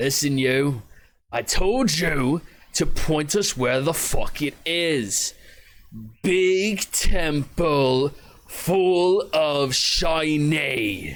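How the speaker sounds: slow, gruff, raspy barking voice. Game master voicing an unseen figure barking orders at somebody, in a gruff chain-smoker voice. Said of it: "you hear a very gruff voice, uh, probably a chain smoker".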